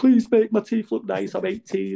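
very high pleading voice, almost crying. Retelling begging a dentist at 18, retelling practically crying, pleading. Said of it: "just like practically crying".

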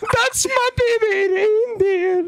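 high, slow, mock-crying wail in Scottish accent. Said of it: "when she's in the courthouse crying".

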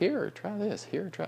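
high, coaxing parent voice.

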